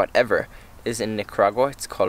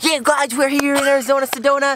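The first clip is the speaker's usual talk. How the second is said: very high-pitched, hyped-up, bad put-on voice. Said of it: "that was a very bad impression".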